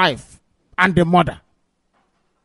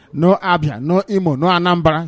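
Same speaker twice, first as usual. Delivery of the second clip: plain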